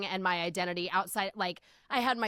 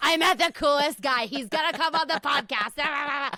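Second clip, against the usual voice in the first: slurred, tipsy voice, high and loud; 7 semitones higher, 7 dB louder than usual. Retell a voice message received two hours after a cocktail picture, imitating Lacey's slurred voice message. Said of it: "a like slurred voice message from Lacey being like".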